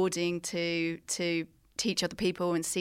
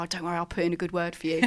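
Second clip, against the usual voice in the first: imitated whisper. Retelling how the tutor whispered in the speaker's ear: imitating Tony whispering. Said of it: "whispered in my ear".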